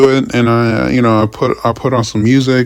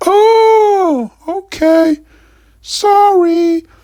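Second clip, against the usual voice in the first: very high, squeaky mock sheepish woman voice. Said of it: "And she's like".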